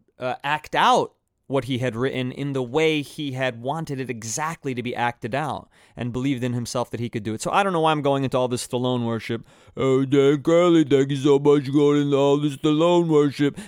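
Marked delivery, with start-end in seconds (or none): 9.8-13.6 put-on belted out loud like a punch-drunk man. Thanking himself for the Stallone talk in an insulting Stallone impression. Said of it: "the most insulting Stallone impression".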